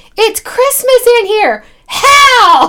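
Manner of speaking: loud, very high, very slow outburst, Hell drawn out. Retelling what an eleven-year-old said walking into a store: imitating a child exclaiming loudly. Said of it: "Very loudly".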